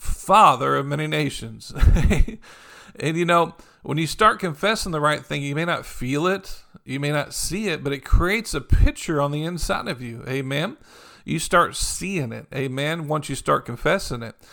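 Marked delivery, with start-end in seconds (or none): 0.0-1.7 loud, projected call. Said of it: "they're yelling across there".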